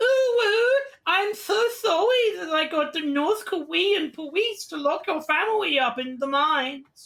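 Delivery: very high-pitched, slow, pleading voice. Retelling how Shara apologizes with fingers together: imitating Shara pleading. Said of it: "makes the pleading face and goes".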